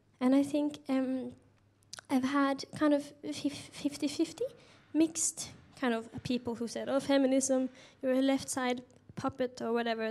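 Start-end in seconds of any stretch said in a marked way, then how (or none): none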